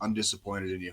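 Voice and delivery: disappointed tone, drill sergeant persona dropped. Retelling how a drill sergeant drops the act: imitating a disappointed drill sergeant. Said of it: "drops the drill sergeant. They're just like".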